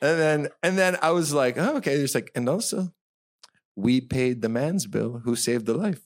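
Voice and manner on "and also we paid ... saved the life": self-congratulatory, smug, put-on French accent. Retelling what people said about who paid a bill, in a put-on french accent. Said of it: "How long are you working on this French accent".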